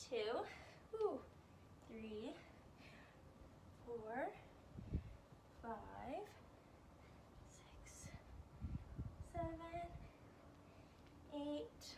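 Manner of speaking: soft, winded, out-of-breath speech. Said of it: "I'm already out of breath".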